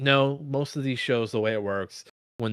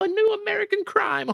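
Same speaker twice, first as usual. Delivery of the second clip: giddy delivery, pitched way up. Imitating Ryan Murphy reacting to a new crime story: giddy Ryan Murphy impression. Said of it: "he was very giddy".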